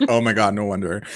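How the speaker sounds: ordinary delivery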